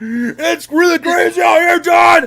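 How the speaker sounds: slow, projected live-news voice. Mocking hurricane news coverage: imitating a hurricane reporter. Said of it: "He's like".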